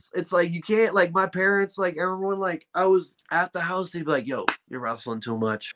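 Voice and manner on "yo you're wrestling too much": put-on deep voice, low and soft. Recalling his parents telling him he wrestles too much, imitating their deep voice. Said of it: "they would get the deep voice on".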